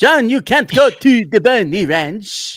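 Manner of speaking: shrill, very high, loud put-on Danish accent. Retelling what John's mother said to him, in a put-on Danish accent. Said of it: "Zen, you do it".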